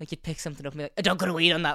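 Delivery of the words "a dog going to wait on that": loud, fed-up, disgruntled mother voice. Impression of a mother when her kid picks up a stick, mock-disgruntled mother voice. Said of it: "just an impression of a really disgruntled mother when your kid picks up a stick".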